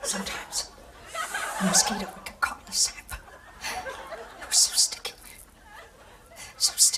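joyless, cheerless movie-star voice. Auditioning as Mister DNA in a Jurassic Park skit: Jodie Foster impression. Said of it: "Jodie Foster as Mister D N A".

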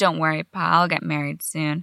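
ordinary delivery

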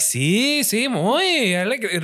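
very slow Spanish, rising gradually to a crescendo. Imitating how a speaker talks in Spanish, with rising crescendo. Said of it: "it's the crescendo up".

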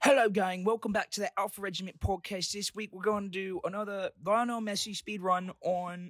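put-on Australian accent, very high. Redoing a podcast intro after being told to show more enthusiasm; fake Australian accent. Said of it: "don't talk Australian".

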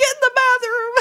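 put-on very high, shrill, loud, tearful crying voice. Retelling what they told him back then, imitating own crying. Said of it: "all emotional and I was like crying".

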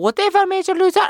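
put-on French accent. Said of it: "French, it was, like, French".

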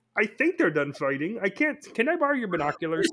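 high puppet voice. Joking about what it is like to sit at WWE, in a Kermit the Frog impression. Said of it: "That was an amazing Kermit the Frog impression".

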